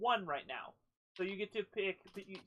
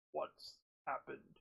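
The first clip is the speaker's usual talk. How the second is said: gruff, hushed, whispered rhino creature voice; 6 semitones lower, 7 dB quieter than usual. The narrator voices one of the rhinos asking what happened, in a gruff rhino voice. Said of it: "speaks in a gruff voice".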